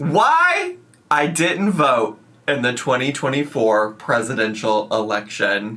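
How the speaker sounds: ordinary delivery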